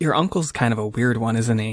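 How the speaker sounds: loud, audible whisper. Voicing a girlfriend leaning in at an awkward dinner: loud whisper. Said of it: "she leans in a little bit and she whispers".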